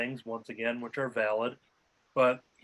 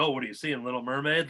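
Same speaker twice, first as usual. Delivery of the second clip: quick, joking, ribbing, acted-out teasing. Retelling what someone at a local theater jokingly asked him, teasing. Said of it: "they jokingly just kind of said like".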